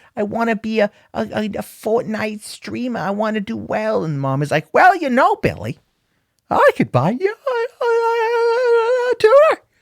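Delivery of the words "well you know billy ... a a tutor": silly, terrible, very high, swooping squeaky woman voice. Acting out a mom answering her son who wants to be a streamer: terrible put-on mom voice. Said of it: "That's a terrible voice to make".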